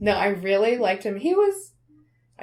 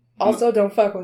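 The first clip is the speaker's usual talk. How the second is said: ordinary talk, nothing marked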